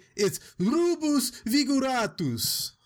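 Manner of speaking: Italian-sounding pronunciation, high and slow.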